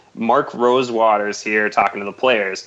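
plain

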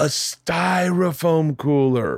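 stage whisper. Retelling a moment in the front row at a comedy show: retelling a loud whisper. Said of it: "in a loud whisper".

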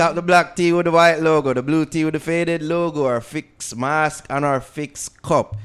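loud, high-pitched, hyped-up announcer read.

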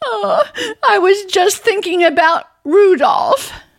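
high-pitched, tearful voice, weeping through the words. In a drama, answering a plea to stop crying, crying. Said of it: "don't you cry".

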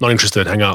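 normal talking voice

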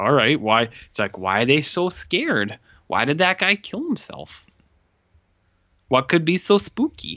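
strange character voice, pitch swooping up and down. Explaining a movie's opening while trying out a new voice, Bagul Skype voice. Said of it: "What's this voice you're doing here?".

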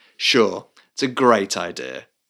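slow, passive-aggressive sarcastic tone. Explaining covert opposition through tone, the speaker is imitating sarcastic agreement. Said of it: "It's clearly like sarcastic".

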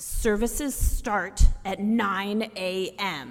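words forced out through clenched, gritted teeth. Retelling the father answering a caller's question, in retelling gritted-teeth speech. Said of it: "through gritted teeth".

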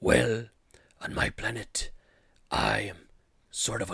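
slow, drawn-out, sinister, evil put-on voice. Retelling the symbiote's reply in a movie scene, in an evil Strong Bad voice. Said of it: "I'm going to do the voice ... a little bit of like evil voice mixed with like Strong Bad".

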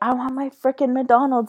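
playful, high, mild shouted yell. Retelling being parked in a party bus at McDonald's, retelling own scream. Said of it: "I'm screaming".

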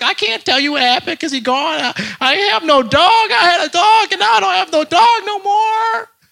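very high, cracking, near-tearful voice breaking. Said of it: "My voice started to crack".

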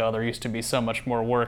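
ordinary talk

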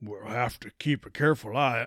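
put-on Old West cowboy accent. Player voicing his game character's line: cowboy accent. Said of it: "I don't know why he's talking like a cowboy".

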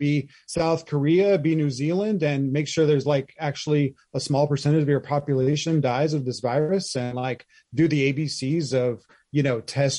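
ordinary talk

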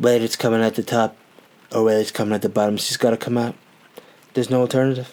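pompous, grand, self-important politician voice. Talking about feeling sick, saying something important: Donald Trump voice. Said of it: "going back to my Trump".

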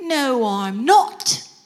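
put-on working-class British accent. Retelling a woman across the street answering his compliment, lower-class british accent. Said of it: "in lower class British".

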